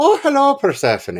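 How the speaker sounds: Irish lilt, very high-pitched. Greeting someone named Persephone: Irish accent. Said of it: "my Irish genetic heritage tries to come out".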